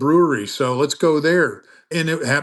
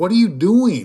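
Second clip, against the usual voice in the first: acted, high-pitched, tearful, sobbing voice; 5 semitones higher than usual. Retelling what a fiance said during a night of sleepwalking: imitating crying fiance.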